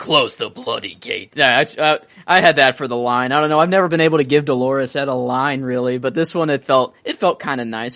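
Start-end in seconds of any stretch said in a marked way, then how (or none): 0.0-1.3 put-on deep voice, lower and slower. Retelling a scene, answering a gentleman as Dolorous Edd, in a deepened voice. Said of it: "let me deepen my voice too".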